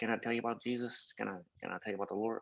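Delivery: weird, creepy, very soft, hushed churchy voice. Mocking creepy Christians talking about the Lord, in a weird churchy voice. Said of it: "why your voice gotta get all weird".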